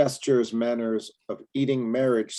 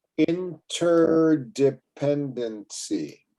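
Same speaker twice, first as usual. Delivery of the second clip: very slow, drawn out, syllable by syllable; 3 semitones higher than usual. Modeling a tough word for others to repeat, very slow. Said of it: "I'm going to say this very slow".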